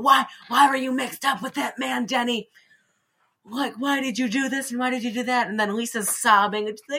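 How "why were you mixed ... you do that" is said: acted out high, demanding yelling. Recapping a scene where two characters confront Denny, retelling a yell. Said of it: "Lisa and the mom are yelling like".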